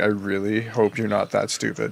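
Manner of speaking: put-on quiet mutter under the breath. Retelling what a man said where a woman couldn't hear, muttering under his breath. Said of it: "and under his breath".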